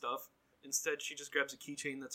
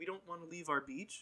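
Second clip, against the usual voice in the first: ordinary talk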